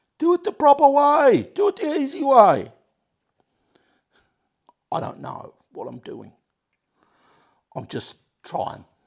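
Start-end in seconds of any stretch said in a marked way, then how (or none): 0.2-2.7 shrill, very high, very loud scream. Imagining viewers shouting advice while working on bearings: imitating viewers screaming. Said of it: "some of you are sitting there screaming at me".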